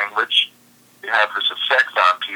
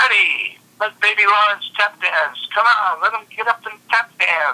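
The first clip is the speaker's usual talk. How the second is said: very high-pitched, annoying heckler voice; 11 semitones higher than usual. Retelling a woman heckling from the audience: imitating an annoying voice. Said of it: "had this sort of annoying voice saying".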